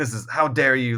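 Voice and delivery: ordinary talk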